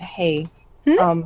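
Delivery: super quiet voice. Voicing a character apologizing for the wagon: super quiet voice. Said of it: "saying it, like, super quiet".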